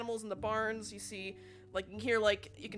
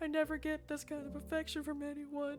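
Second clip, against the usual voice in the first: put-on high, sniffly near-tears voice; 5 semitones higher, 7 dB quieter than usual. Voicing a character who is moved after a cat girl nuzzles him: acted sniffling, near tears. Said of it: "he's sniffling".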